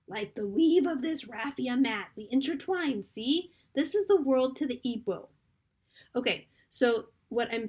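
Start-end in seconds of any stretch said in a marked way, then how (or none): 0.1-5.2 put-on old grandmother voice, higher and louder. Reading a passage aloud to picture the scene: old grandmother's voice. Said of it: "I'm gonna do it in the grandmother's voice".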